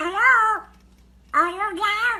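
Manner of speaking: quack-like talking cartoon duck voice. Breaking into a bit mid-conversation, in Donald Duck voice. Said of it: "in that Donald Duck voice".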